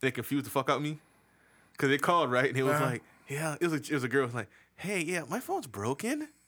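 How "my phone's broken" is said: questioning upward rise on the word broken. Quoting a girl who called, rising upward on broken like a question. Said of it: "they did that upward inflection thing".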